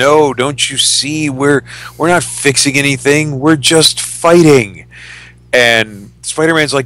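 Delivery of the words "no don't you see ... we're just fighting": weeping, tearful, crying through the words. Retelling a comic scene where the hero stops fighting: imitating Captain America weeping. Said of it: "and he starts weeping".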